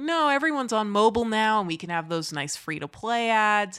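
plain

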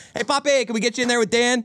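put-on cheery, easygoing tone. Speaker acting out how he asks someone to get in there, acting out a jovial ask. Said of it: "I like to be jovial".

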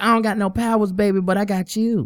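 high-pitched pimp-style voice. Retelling what he said to her, sounding like a pimp. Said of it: "he just really turned into a pimp right there".

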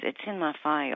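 put-on muttering. Retelling his answer to the nurse's question: imitating muttering under his breath. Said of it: "he said it really under his breath".

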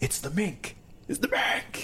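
thrilled, eager, high excited squeal. Spotting a mink from the truck, the speaker retells shouting to Justin: retelling an excited scream. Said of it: "And I'm like screaming about it".

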